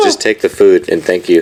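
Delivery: ordinary delivery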